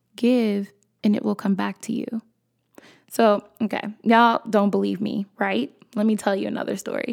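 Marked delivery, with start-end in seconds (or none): 0.2-2.3 mock whispering. Retelling what a mother whispered while sitting beside her: imitating someone whispering. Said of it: "she leans over and she whispers".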